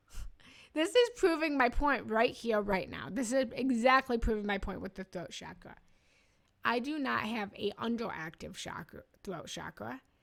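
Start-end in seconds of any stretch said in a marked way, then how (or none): 3.1-5.7 fast, rushed speech. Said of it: "I'm still talking too fast".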